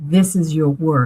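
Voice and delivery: booming, resounding voice. Retelling a voice heard while watching a show about mediums, booming voice. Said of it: "it was almost a booming voice".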